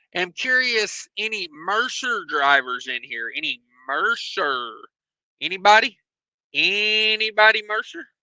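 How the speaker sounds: normal talking voice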